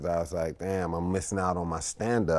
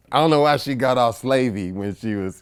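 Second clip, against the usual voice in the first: ordinary talk, nothing marked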